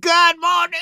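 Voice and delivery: fake, booming, very loud and very high shrill voice. Retelling a prank video, imitating the boyfriend: loud mocking greeting. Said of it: "all loud and whatnot".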